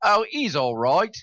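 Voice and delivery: put-on East End London accent. Retelling a ghostly voice caught on a recording: imitating an East End accent. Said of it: "pardon my accent".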